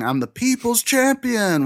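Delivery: put-on, very high-pitched screaming voice. Players recall a game moment, retelling Fjorg's scream. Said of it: "Fjorg screaming".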